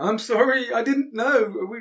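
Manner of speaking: acted-out sobbing. Speaker describing a man who has just gone out there, acting out sobbing. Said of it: "he's sobbing and he's going".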